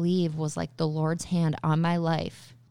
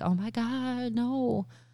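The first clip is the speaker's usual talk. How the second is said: high, screaming, sobbing cry of distress; 6 semitones higher, 3 dB quieter than usual. Recalling a past emergency, retelling how the speaker's mom was screaming and crying. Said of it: "my mom just over screaming, crying".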